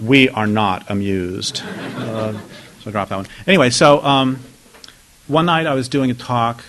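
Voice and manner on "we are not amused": slow, drawn-out, regal, royal pronouncement tone. Retelling how an audience member reacted to a joke: Queen Victoria impression. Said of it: "doing her very best Queen Victoria impression".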